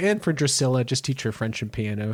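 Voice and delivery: ordinary talk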